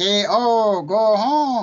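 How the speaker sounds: very slow, deliberate, loud, drawn-out alien voice. Saying a wrestler's name and telling him to go home: E.T. impression. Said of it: "that isn't E T".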